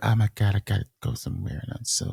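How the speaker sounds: teasing, mocking put-on voice. Imitating another speaker talking about upcoming travel: mocking a friend's voice. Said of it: "Is that how it sounds?".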